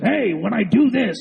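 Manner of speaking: put-on gravelly voice. Recalling a guy's video while trying to remember his name: gravelly Alex Jones voice. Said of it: "He had the really gravelly voice".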